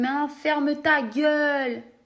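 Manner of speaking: put-on Marseille accent. Retelling a guy from Lille who suddenly talked to him, put-on Marseille accent. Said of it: "il met un accent marseillais".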